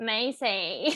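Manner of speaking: put-on squeaky voice. Retelling how a man met at a bar said a name: imitating Pensacola's squeaky voice. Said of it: "when he said my name, it was like".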